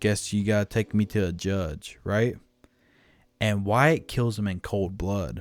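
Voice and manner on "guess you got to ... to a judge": put-on mocking, taunting tone. Retelling how an unarmed outlaw taunted his captors: imitating a mocking remark. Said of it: "mockingly says".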